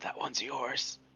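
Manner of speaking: hushed whisper. Leaning over to another character while someone defends a story: whispering. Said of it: "just whisper".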